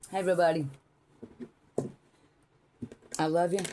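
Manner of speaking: speaking with mouth full. Greeting everybody at the start, talking with a mouthful of food. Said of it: "I caught me my mouthful of food".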